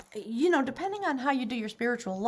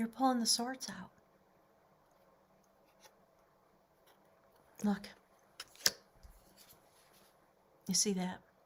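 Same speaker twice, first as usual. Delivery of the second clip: soft, emotional, choked-up voice; 2 semitones lower, 7 dB quieter than usual. Guiding a listener through a healing visualization, choked up. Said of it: "I'm getting so choked up".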